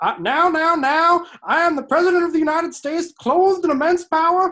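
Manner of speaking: very high, loud, odd tea-kettle-like projected voice. Imitating a method actor playing the president in a movie: Lincoln weird voice from the movie. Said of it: "I'm doing an impression of the movie Lincoln".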